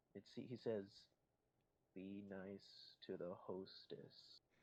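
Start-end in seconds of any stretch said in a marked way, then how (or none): 2.0-4.4 ghostly, eerie, echoing, very slow whisper. A voice speaks right into the listener's ear, echoey and eerie. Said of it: "echoey, eerie voice saying to you".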